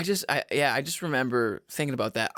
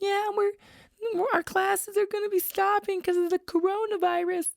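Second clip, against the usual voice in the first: put-on very high, tiny, sweet little girl voice. Retelling what a very young girl at kickboxing class said, in the sweetest little voice. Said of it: "in like the sweetest little voice".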